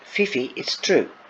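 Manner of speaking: ordinary delivery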